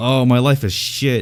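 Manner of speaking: mock high-pitched, drawn-out angry scream. Speaker recalls whacking bushes with a sword during an argument, retelling own screaming. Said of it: "I was just screaming like".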